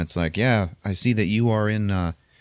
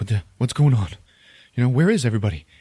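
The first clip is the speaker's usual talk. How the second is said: put-on, fast, mildly panicked and flustered babble; 3 semitones higher, 3 dB louder than usual. Retelling a show's plot as a character finds no one aboard: imitating someone panicking. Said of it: "he starts panicking".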